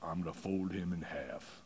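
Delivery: very deep, very soft, quiet murmur. Retelling what an offensive lineman answered when asked about defenders; real low voice. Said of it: "this guy says his real low voice".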